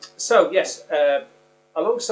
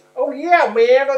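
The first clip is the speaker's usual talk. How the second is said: mock irritating exclaiming, higher, louder; 12 semitones higher, 8 dB louder than usual. Showing an irritating thing people do when talking, imitating an irritating exclamation. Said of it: "It's like when people do this".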